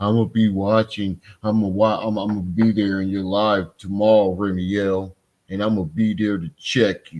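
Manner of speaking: ordinary delivery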